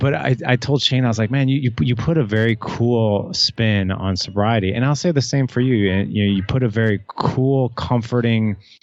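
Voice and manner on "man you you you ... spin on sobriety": plain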